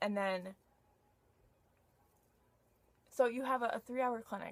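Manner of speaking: halting stammer, repeating words. Someone explaining their clinic requirements, stuttering. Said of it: "Sorry, I'm stuttering".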